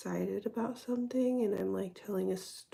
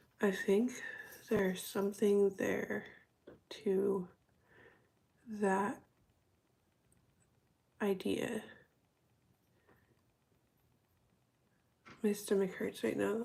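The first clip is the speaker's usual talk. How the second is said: talking slowly. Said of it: "I'm talking slow".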